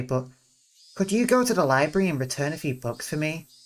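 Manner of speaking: ordinary talk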